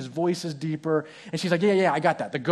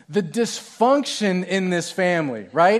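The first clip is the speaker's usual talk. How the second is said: ordinary talk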